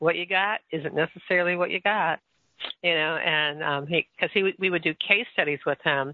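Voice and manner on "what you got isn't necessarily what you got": put-on Texas accent. Recalling a great diagnostician's saying from case studies, in a Texas accent. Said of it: "he used to say with this Texas accent".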